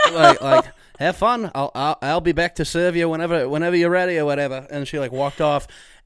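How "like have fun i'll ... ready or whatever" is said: put-on Australian accent. Retelling a restaurant visit, the speaker quotes the server, in a fake australian accent. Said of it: "Our server spoke in an Australian accent".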